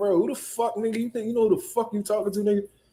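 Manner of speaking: acted angry, confrontational tone. Retelling what he said to Rolly during their argument: retelling his own heated outburst. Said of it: "I was heated at Rolly".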